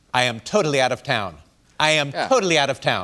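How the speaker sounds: firm, resolute tone. Retelling a phone call inviting her onto the show, imitating Oprah Winfrey. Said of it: "That was Oprah".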